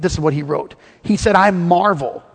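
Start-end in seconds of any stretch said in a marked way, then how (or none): none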